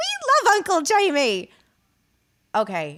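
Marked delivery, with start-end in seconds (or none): 0.0-1.5 put-on children's voices, higher and louder. Retelling doing an impression at a party: imitating the children in Love Actually. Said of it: "I pretended to be the children in Love Actually".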